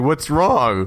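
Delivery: put-on sweet innocent tone. Retelling a story scene as he meets the scared girl, Dracula acting all nice. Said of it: "But then he's like acting all nice".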